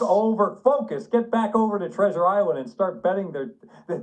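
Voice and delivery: loud, high-pitched, full-on screaming rant. Retelling your reaction when he said he needed twenty-four hours off, retelling own screaming. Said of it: "and I'm screaming at him".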